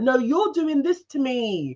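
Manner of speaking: high, slow, hammy, overacted delivery. Retelling how a woman on the show hams it up: imitating someone hamming it up. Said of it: "ham it up".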